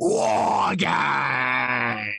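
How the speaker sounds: gruff, rough, creaky rasp, Games drawn long. Doing an impression of William Regal announcing the event: William Regal impression. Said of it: "Here's my William Regal impression".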